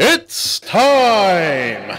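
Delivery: high, drawn-out ring announcer call, stretched out. Imitating the UFC announcer's famous call: Bruce Buffer voice. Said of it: "Bruce Buffer from, uh, from, uh, U F C".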